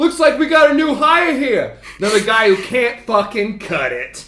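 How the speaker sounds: orc voice, blurted out too loudly. Voicing an orc taunting a new hire: loud orc voice. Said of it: "kind of says out loud".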